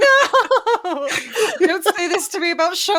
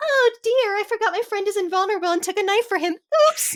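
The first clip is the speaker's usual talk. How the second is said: silly, funny put-on girlish voice; 3 semitones higher than usual. Imagining a villain mimicking what a girl thinks, funny girly voice. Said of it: "a funny girly voice".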